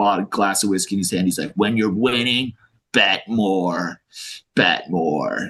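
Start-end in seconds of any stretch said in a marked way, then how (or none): 1.5-5.5 very slow, drawn-out put-on smoker's voice. Speaker quotes a pit trader from a story about the trading pit, imitating a smoker's voice. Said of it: "He's got this smoker's voice".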